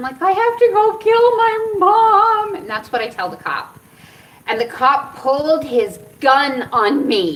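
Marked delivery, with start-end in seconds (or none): 0.2-2.5 very high, drawn-out, bawling sobbing wail. Retelling what was said to a cop at the car window: imitating own crying. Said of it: "I am bawling my eyes out".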